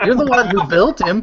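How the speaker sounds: shouting. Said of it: "I'm yelling at him".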